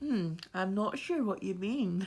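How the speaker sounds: slow, put-on smart-speaker assistant voice.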